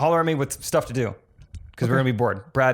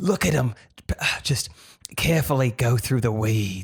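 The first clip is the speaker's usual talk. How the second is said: put-on deep Australian accent. Doing a deeper voice while joking about the outback: Steve Irwin impression. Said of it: "the deeper, the Steve Irwin".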